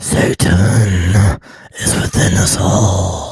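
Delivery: very loud, very slow, drawn-out harsh screamed vocals. Opening the episode with a screamed line: harsh vocals. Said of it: "I am not practiced on harsh vocals".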